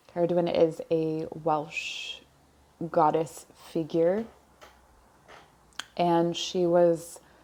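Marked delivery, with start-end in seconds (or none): 5.9-7.2 speaking slowly, drawn out. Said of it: "I'm speaking slowly because messages are coming in".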